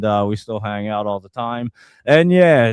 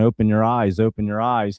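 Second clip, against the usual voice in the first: normal talking voice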